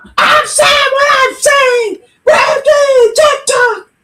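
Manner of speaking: shrill, very high, drawn-out screaming. Retelling what she screamed over there: imitating someone screaming. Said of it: "She was just screaming over there".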